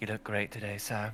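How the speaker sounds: low, quiet mutter under the breath. Pouring champagne for the Prime Minister in character, said under the breath. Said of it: "under my breath".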